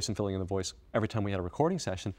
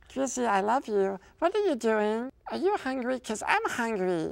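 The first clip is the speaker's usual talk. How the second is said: tiny, very high-pitched creature voice; 14 semitones higher than usual. Showing the voice he does to annoy friends at work: little Stitch voice. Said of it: "this little voice that I do to annoy friends".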